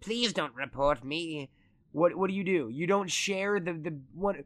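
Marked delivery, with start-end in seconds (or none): 0.0-1.5 extraterrestrial-sounding voice. Posing a hypothetical to a friend, the speaker talks as an alien in an alien voice. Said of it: "that's the alien voice".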